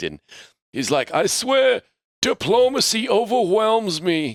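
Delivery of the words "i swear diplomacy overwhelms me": put-on Northeastern accent, higher. Retelling a friend's father's answering machine message: imitating a Northeast US dialect. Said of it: "he's very, like, Northeast, uh, dialect".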